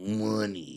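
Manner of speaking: put-on mobster style, stretched O in "money". Mimicking how he says the word like a modern mobster, stretched o in money. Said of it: "You put a little emphasis on the on the O".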